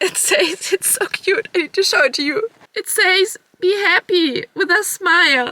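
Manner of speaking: speaking through tears, high. Speaker in the car shows the audience a sign they just noticed, crying. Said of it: "now that I'm crying".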